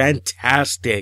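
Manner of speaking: sarcastic, ironic tone meaning the opposite. Reviewing a DVD and repeating the praise with a sarcastic "fantastic". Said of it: "I am saying that sarcastically".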